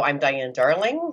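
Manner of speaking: rising, question-like lift in pitch on "darling". Warning about uptalk when introducing yourself: uptalk rise on 'Darling'. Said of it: "there's a lot of uptalk".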